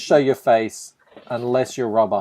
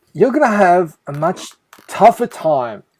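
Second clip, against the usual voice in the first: serious, stern, demanding, pitched-up voice; 7 semitones higher, 4 dB louder than usual. Relaying what Rob demanded to the other speaker, imitating Rob. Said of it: "I'm going to try and do a Rob voice".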